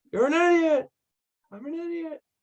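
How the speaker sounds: very high cartoon-style echo, pitch going way up. Performing the Echo bit after being asked: Grinch echo bit voice. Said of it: "Can you do the Echo?".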